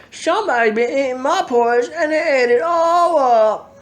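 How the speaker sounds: put-on very high squeaky baby voice. Reading the three bears story aloud, the narrator voices Little Bear in a squeaky baby voice. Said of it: "in his small squeaky baby voice".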